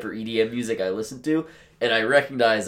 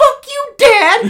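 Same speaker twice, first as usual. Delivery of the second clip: put-on very high, very loud bratty thirteen-year-old wail; 13 dB louder than usual. Describing someone running into the room shouting: thirteen-year-old voice. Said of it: "in the best thirteen-year-old voice".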